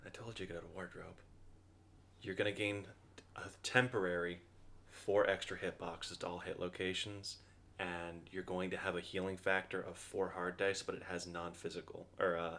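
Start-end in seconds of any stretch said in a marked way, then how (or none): 0.1-1.2 low, soft, hushed half-whisper. Voicing an unseen figure speaking to the fallen player: half-whispering. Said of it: "you hear a whisper that says".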